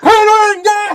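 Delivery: yelling loudly. Calling across a tavern to a companion in character: screaming across a tavern. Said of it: "I just fucking scream across the tavern".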